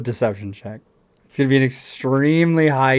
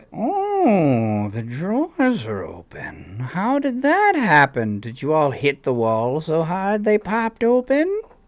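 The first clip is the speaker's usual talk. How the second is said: put-on sing-song little old lady character voice; 4 semitones higher than usual. A player in a tabletop game speaks in character, little old lady voice. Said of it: "it's a little old lady's voice".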